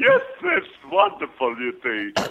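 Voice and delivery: put-on old entertainer voice with wildly swooping pitch. Asked to do an Ed Wynn on the spot, Ed Wynn impression. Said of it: "can you do an Ed Wynn for us? Sure".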